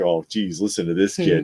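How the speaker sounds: talking through put-on laughter. Retelling a scene where criminals laugh at a kid: imitating criminals laughing. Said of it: "they're all laughing like".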